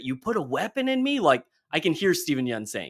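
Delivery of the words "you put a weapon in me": very high-pitched, screamed out, acted. Describing a character's great line in a scene, retelling a scream. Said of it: "and then screams it".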